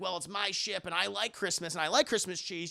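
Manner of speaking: plain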